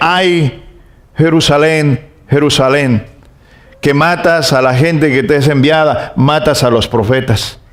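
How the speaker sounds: normal talking voice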